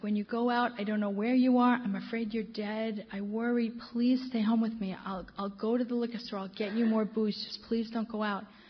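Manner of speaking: mock crying, tearful pleading voice. Retelling a crying man begging not to go out: imitating a crying plea. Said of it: "and he's crying".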